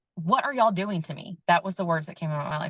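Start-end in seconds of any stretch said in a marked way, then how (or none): 0.2-1.4 mild, half-voiced yell with an acted hint of screaming. Recalling a birth, the speaker reenacts screaming at the people touching them: reenacting own scream. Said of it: "I was screaming".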